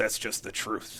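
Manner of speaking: imitated muttering under the breath. Retelling a father's quiet reply to a joke: imitating a mutter under the breath. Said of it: "under his breath".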